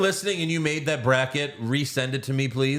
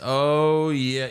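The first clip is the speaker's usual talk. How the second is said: put-on trembling, shaky voice. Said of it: "she said in a trembling voice".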